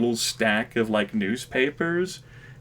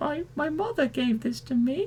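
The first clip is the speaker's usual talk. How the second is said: put-on soft, high small child's voice; 5 dB quieter than usual. Voicing a six-year-old homeless kid asked about a coat: little kid voice. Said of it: "little six year old homeless kid like blinks".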